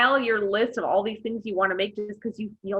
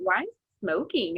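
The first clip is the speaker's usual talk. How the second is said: ordinary delivery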